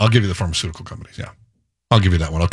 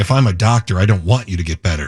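normal talking voice

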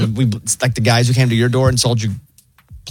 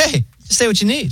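very high, laid-back, chill automated robot voice; 11 semitones higher than usual. Retelling a call to the pharmacy, imitating the chill robot voice. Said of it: "the robot voice is like so chill".

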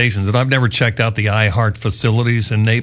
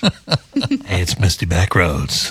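very slow, low, swooping creepy radio DJ drawl; 4 semitones lower than usual. Trying out a made-up country DJ name on air: creepy DJ intro voice. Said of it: "That sounds scary".

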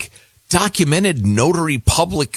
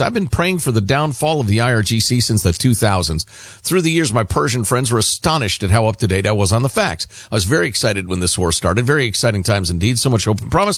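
ordinary delivery

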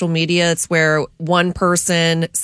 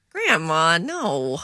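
flirtatious, flirty delivery; 4 dB quieter than usual. Taking a turn in a group game of saying one line in different moods: flirty. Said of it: "Now flirty".

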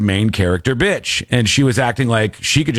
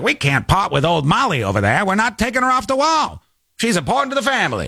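put-on old-time 1920s Chicago mobster-style gangster voice; 8 semitones higher than usual. Retelling what they said about keeping the bird Molly on the wall: 1920s Chicago gangster voice. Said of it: "They sound like a 20s Chicago gangster".

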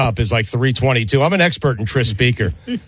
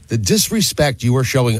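ordinary talk

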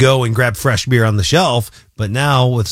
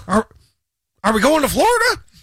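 very high, sing-song, swooping, bad put-on voice. Trying an impression of Bill, who is away this week: imitating Bill. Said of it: "That's my best Bill".

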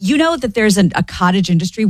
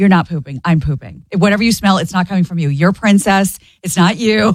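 ordinary delivery

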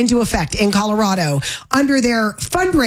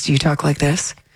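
public radio announcer voice, much lower; 6 semitones lower than usual. Teasing a listener who appears on PBS about how they talk, NPR voice. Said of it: "do you do an NPR voice?".

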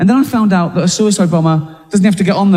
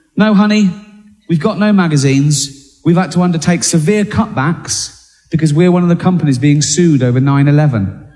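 plain

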